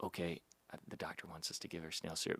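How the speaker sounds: quiet whispered voice. Retelling what the sisters said to each other: imitating someone whispering. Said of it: "kinda whispering".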